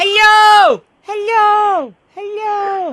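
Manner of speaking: high, echoing call, as if into mountains. Giving an example of calling out in the mountains: shouting hello as in mountains. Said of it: "एक minute जरा मैं चिल्ला".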